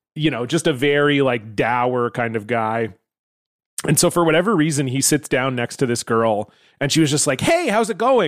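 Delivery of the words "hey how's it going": bright, chipper, very high goody-two-shoes voice. Speaker retells a girl greeting a dour guy, imitating a chipper girl. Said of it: "Like all chipper".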